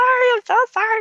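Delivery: play-acted, very high, loud, tearful blubbering. Retelling an apology made while blowing her nose into the microphone, retelling a tearful apology. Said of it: "blowing my nose into the microphone".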